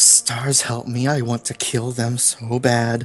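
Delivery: muttering under the breath. A player says what Annie says to the Dolphin Philly, muttered under breath. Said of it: "Like under his breath".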